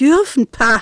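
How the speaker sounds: scornful, loud, contemptuous scoff. Narrator reads him looking down on her after her timid question, contemptuous. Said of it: "sah verächtlich auf sie herunter".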